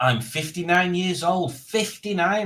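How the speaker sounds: mock eager announcer voice. Reading another viewer's comment aloud, imitating Ivor Howard, excited. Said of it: "in just as an excited way".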